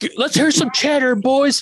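very high-pitched, hollering yell. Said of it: "yelling at everybody".

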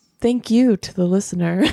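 low, seductive tone. Signing off the episode and thanking the listener, sultry Delilah voice. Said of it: "I got this sultry voice all of a sudden".

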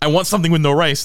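high, angry, demanding shout. Acting out a customer yelling at sushi staff about the rice, retelling a man yelling. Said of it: "he's like yelling at them about the rice".

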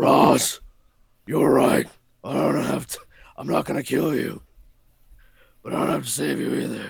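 put-on raspy superhero voice. Quoting a Batman Begins line while mocking Batman: mocking Batman voice. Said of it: "I think I'm having an asthma attack".

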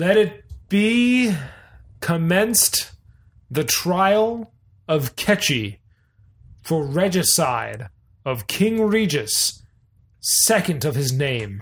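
booming, amplified, proclaiming judge voice. Narrating a cleric judge as he opens the trial, booming judge voice. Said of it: "His voice booms from some magical way".

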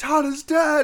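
very high, screaming alarmed cry. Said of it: "She's screaming".

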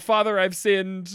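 ordinary talk, nothing marked

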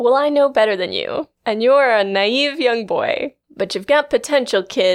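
mock imperious, commanding-sounding voice. Describing a character's manner toward Jared: imitating an imperious tone. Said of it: "her whole attitude of".

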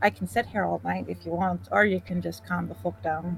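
softly spoken, low, quiet delivery. A player's character, holding someone in a bear hug from behind, says it quietly. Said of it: "And I'll just say quietly".

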